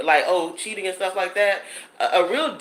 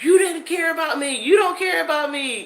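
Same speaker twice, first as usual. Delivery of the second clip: put-on shrill, very high hollering scream; 9 semitones higher than usual. Retelling the guy's phone call after being cut off: imitating someone hollering and screaming. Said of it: "he called me up hollering and screaming".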